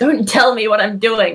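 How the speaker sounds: loud shouting. A character answers a voice speaking as Nyx, yelling. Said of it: "you're yelling at people who aren't here".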